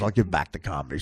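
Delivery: put-on, very low, stone-serious deadpan. Retelling what a comedian said about a comedy bus: imitating someone dead serious. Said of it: "dead serious".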